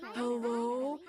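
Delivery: sleepy, groggy, barely awake voice. Retelling answering a call from mom, imitating a half-asleep voice. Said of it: "half asleep. I go".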